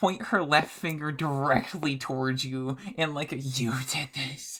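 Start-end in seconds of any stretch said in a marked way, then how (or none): 3.3-4.6 breathless, heaving, gasping delivery. Voicing a character dry heaving who points at another: heaving while speaking. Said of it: "in her heaving".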